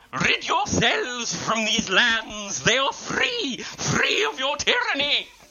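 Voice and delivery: very high, slow, shrieking banshee voice. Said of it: "Banshee style, shrieking at these halflings".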